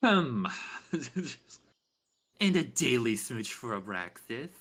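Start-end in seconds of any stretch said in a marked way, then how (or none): 2.4-4.5 mocking, imitated sing-song voice with a smooch sound. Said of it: "Is that what I fucking sound like to you?".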